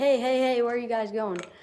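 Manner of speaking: eager, fast, excited calling out. Demonstrating a call people use to bring others back, excited calling out. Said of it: "like really excited".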